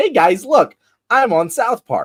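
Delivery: very high, chipper, pleased and thrilled. Mocking how Charlie Kirk reacts to being satirized: imitating Charlie Kirk acting happy. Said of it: "he's just ignoring the satire and being like".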